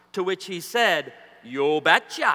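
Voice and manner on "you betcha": put-on heavy Norwegian accent, much lower pitch. Retelling the reply of his bride's father, in a thick norwegian accent. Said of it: "he responded in his thick Norwegian accent".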